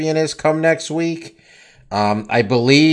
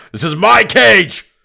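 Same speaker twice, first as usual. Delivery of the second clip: raw, loud, rough, full-throated bellow; 6 semitones higher, 6 dB louder than usual. Imagining a fighter bellowing at a man who tries to enter the cage, acting out a bellow. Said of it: "Francis just bellows".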